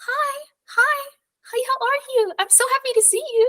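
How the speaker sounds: very high, thin, tinny voice. Describing a voice you suddenly hear while staring at something: tinny high voice. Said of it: "like very like tinny high voice".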